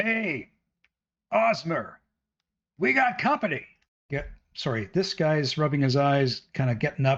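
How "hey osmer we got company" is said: high-pitched, shouted call. Voicing a guard who spots intruders: shouting a warning. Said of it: "he shouts out".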